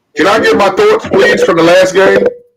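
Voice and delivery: very loud, high-pitched shouting. Asking the others for a turn to give thoughts: yelling into the mic. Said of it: "why are you yelling into the mic".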